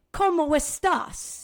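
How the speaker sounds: Spanish with New York accent. Showing how spanish sounds with the wrong accent, in a new york accent. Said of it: "With like kind of a New York accent".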